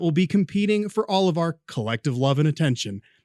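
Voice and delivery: ordinary delivery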